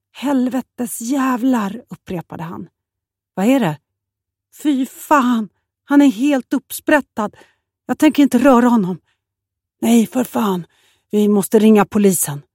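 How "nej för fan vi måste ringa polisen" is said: quavering, trembling, shaken, unsteady voice. On a fishing boat, a man reacts to a cut-open body, with a trembling voice. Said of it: "sa Göran med darrande stämma".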